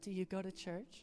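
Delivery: put-on casual, chatty girl's voice. Retelling a girl asking her friend a question, doing an impression of this girl. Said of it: "That's my impression of this girl".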